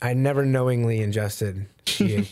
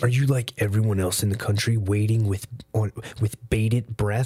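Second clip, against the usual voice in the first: fake, mock-serious voice. Retelling what the speaker said to a cousin this morning, put-on serious voice. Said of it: "I used a serious voice".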